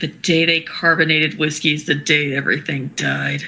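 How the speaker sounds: muttered under the breath, mumbling. A character mutters as her companion walks away with his tea, muttering under breath. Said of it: "She just mutters as he walks away".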